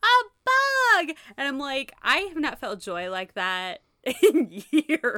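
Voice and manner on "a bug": very high, loud, freaked-out shriek. Retelling a scene where Lavender finds a bug, imitating Lavender freaking out. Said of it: "freaking the fuck out over this bug".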